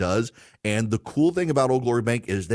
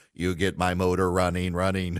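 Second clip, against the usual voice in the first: robot voice, lower pitched; 4 semitones lower than usual. Retelling how a father ran around the house talking: robot voice. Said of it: "in his robot voice saying".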